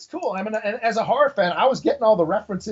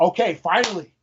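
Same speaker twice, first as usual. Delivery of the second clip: ordinary talk, nothing marked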